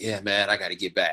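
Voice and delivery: ordinary talk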